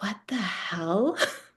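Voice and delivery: leaned-in hushed whisper under the breath. Retelling a reaction while watching a film in the theater: retelling a whisper. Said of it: "leaned forward and whispered".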